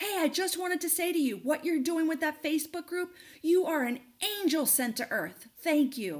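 mock yelling, loud and high-pitched. Retelling what a woman yelled from the parking lot: imitating a woman yelling. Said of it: "she waves at me and she yells".

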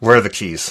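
angry, forced out through clenched teeth. Retelling own angry question about the keys: imitating a teeth-gritted demand. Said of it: "It was teeth gritted".

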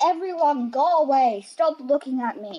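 fed-up, loud, high-pitched angry yelling. Asked how mum behaves when angry, speaker acts her out, imitating mum's angry yelling. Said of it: "You yell and you swear a bit".

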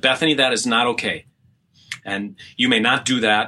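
put-on stern voice. Recounting telling someone off for going into the refrigerator: retelling stern scolding. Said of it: "I got stern and I just said".

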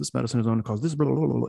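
rapid-fire rattled-off commercial announcer patter. Mocking TV medicine commercials, the speaker imitates the side-effects voice: imitating fast-talking commercial voice. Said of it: "the voice comes on and talks really fast".

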